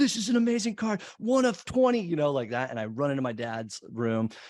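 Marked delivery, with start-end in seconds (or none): 0.0-2.0 very high, loud, hard-selling pitchman yell. Retelling a late night TV baseball card pitch: imitating a shouting TV pitchman.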